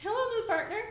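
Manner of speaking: put-on childlike, high, young kid voice. Voicing a character by imitating a younger brother's voice. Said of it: "how my brother sounded when he was younger".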